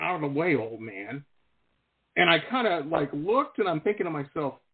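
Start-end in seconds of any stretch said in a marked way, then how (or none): 0.0-1.2 mumbled under breath. Retelling a goth kid's remark in a grocery store: imitating a mumble under breath. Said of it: "he kinda mumbled under his breath".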